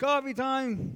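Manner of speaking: high, slow, drawn-out yell. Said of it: "And I yelled".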